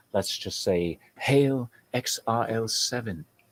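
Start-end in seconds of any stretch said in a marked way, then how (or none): 1.1-3.2 fake British accent, very slow and drawn out. Greeting a guest on a show, then a cheer in a put-on British accent. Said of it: "since I'm speaking in a British voice".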